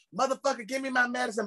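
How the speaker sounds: very high, shrill screaming voice. Telling a pharmacy story, imitate a woman in the back screaming. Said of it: "I hear some woman in the back screaming like".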